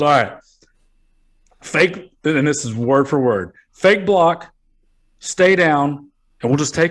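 put-on serious voice. Retell the play being called in the huddle, imitating Val Kilmer being real serious. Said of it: "And he's like real serious".

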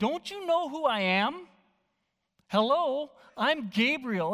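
slow, acted, mildly put-upon annoyance. Discussing the angel's announcement, voicing Gabriel's words as annoyed Gabriel. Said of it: "a little bit of annoyance in his voice".

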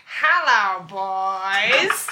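put-on low celebrity-style voice, boys stretched long. Amid laughter, acting out what someone says in a story, Billy Crystal impression. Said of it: "That's a great impression of Billy Crystal".

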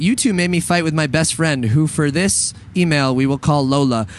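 ordinary talk, nothing marked

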